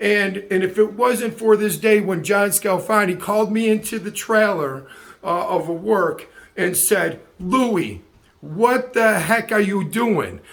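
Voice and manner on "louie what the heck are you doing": tough, strong, demanding Italian man voice. Recalling the day a man called him into the work trailer: imitating John Scalfani. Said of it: "my best and cleanest impersonation of a of a strong Italian man".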